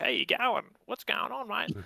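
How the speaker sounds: exaggerated, put-on Australian accent, pitched very high. Mocking someone on a domestic Australian TV show: put-on Australian accent. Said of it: "they'll put on the Australian accent".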